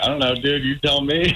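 mock sarcastic tone. Retelling a sarcastic reply to a stranger with duffel bags: retelling a sarcastic reply. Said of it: "I just said sarcastically back".

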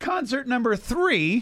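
high voice cracking partway through. Speaker announcing the next concert pick to a group, voice cracking. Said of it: "my voice just cracked there".

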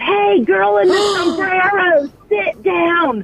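put-on yell. Recalling her husband at a concert yelling at a girl in a hat, retelling her husband's yell. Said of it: "stands up and yells".

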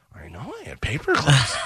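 rough, raspy, smoke-worn smoker's voice. Recalling a radio-station receptionist heard through the open studio door: voice like Marge Simpson's sisters. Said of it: "I would just hear her going".

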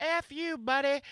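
put-on very high, squeaky old lady voice. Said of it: "this lady in the front had to be a hundred".

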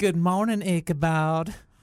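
fake elderly Southern woman accent.

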